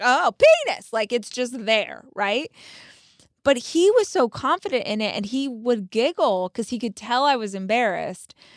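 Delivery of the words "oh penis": startled, caught-off-guard, pitched-up exclamation. Retelling seeing her naked husband: imitating own startled reaction. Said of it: "It still sometimes is startling to me".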